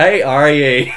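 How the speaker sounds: very loud, put-on Northern Irish accent. Describing a recurring comedy joke, a speaker quotes it in a put-on northern irish accent. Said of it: "try and put on the Northern Irish accent".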